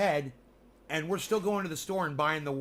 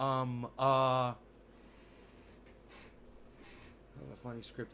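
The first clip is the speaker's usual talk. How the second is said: filler-heavy put-on voice, lower and quieter; 4 semitones lower, 7 dB quieter than usual. Reading chat comments, the speaker mocks Elon Musk with a stammering Elon Musk impression. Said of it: "Elon trying to be cool".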